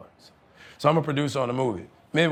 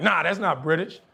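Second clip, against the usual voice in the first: ordinary talk, nothing marked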